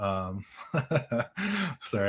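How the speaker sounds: laughing, with pitch swinging up and down.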